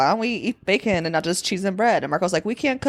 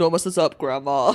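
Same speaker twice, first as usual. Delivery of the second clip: put-on deeper voice; 4 semitones lower than usual. Retelling what a man in a gnome-like disguise says to grandma, deepened voice. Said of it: "he like deepens his voice and he's like".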